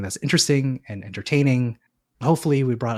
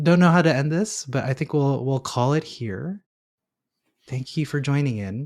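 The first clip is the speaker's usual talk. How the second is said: soothing, calm, soft hushed ASMR-style voice; 3 semitones higher than usual. Podcast host signs off and thanks listeners late in the day: calm podcast ASMR voice. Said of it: "I've gone into my calm podcast A S M R voice".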